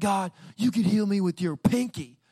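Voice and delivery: put-on high-pitched screamed outburst. Retelling shouting at God while looking up, retelling a scream. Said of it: "I'm just screaming".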